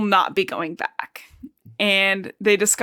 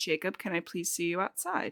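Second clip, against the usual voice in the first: soft, very quiet, hushed and very calm; 2 semitones lower, 13 dB quieter than usual. Retelling a scene where Edward calls Jacob outside: Edward speaking very calmly. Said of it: "calls Jacob's name very calmly".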